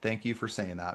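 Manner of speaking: soft, slightly sarcastic tone. Responding to an insensitive comment about a lost child, sarcastic. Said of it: "I say those things sarcastically a little bit".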